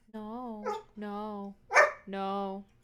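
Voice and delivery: sad, sorrowful voice. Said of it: "He sounds so sad".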